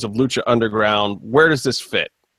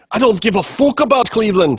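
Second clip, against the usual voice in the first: put-on well-done Irish accent, pitched up; 8 semitones higher, 3 dB louder than usual. Quoting a show listener's remark on the show, [name]'s Irish impression. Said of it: "in his much better Irish impression".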